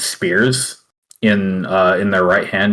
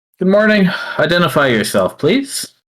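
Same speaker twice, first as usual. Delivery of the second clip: put-on woman's voice, higher; 9 semitones higher than usual. Voicing the left of the figures standing at attention: female voice. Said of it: "the left one says with a female voice".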